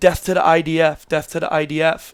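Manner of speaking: normal talking voice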